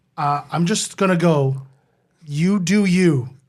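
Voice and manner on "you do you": firm, assertive tone. Speaking in character to a stranger who wants to talk: assertive. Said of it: "I say it assertively".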